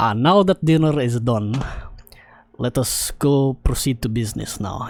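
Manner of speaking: slight put-on Russian accent, lightly applied. Voicing a character who turns to business after dinner, slight Russian accent. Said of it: "I'll give him a slight Russian accent if I can".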